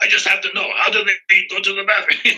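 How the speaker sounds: put-on Hungarian accent, pitched high. Recalling a Rugrats creator's first question to the speaker, in a Gabor Csupo Hungarian accent. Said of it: "I like his Hungarian accent".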